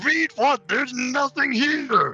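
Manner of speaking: loud yelling. Told to stop shouting, a character answers someone trying to read, shouting. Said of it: "stop shouting".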